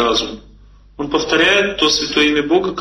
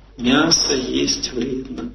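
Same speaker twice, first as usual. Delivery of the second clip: soft, tender, kindly, gentle voice; 2 semitones lower, 4 dB quieter than usual. Testing whether the audience's ego flares up, soft gentle voice. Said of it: "Я сейчас нежно, так я постараюсь, нежным голосом".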